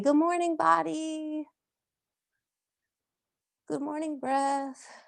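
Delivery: kind, sweet voice. Guiding listeners through a stretch on the mat, in the kindest, nicest voice. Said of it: "in your kindest, nicest voice".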